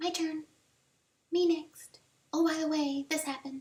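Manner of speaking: tiny, very high, squeaky little voice. Speaker voices a book idea nagging from behind the ear, in a squeaky little voice. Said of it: "It's been the squeaky little voice".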